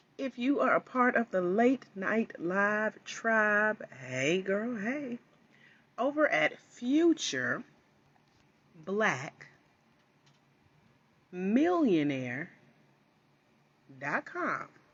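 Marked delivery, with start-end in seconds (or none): 6.0-14.7 slow deliberate dictation pace, halting, words split up. Live host giving the website slowly so she can type it in chat. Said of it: "Saying it slow".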